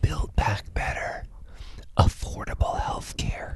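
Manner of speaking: put-on whispering old man voice. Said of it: "No Joe Biden whispering".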